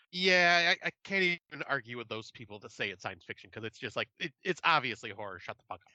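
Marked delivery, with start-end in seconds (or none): none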